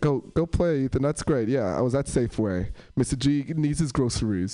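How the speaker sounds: plain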